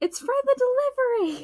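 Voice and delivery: blurted-out, very high, loud put-on yell. After shutting off the headset, speaker re-enacts own loud yell. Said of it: "I yelled it so loud".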